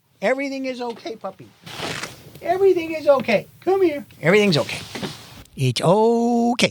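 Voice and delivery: very high, soothing, coaxing coo, okay stretched. Speaker demonstrates how they calm their frightened dog, in a soothing puppy voice. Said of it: "that's my Zoe voice".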